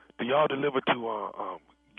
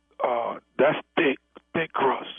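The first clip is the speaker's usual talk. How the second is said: barely audible, hushed, too quiet, under the breath. Ordering pizza on a call, asked to speak up: speaking too quietly. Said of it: "I'm having a really hard time hearing you".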